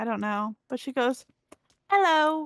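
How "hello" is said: put-on British accent, belted out very loud. Imitating how Em greets people, in a British accent. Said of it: "Em speaks with a British accent".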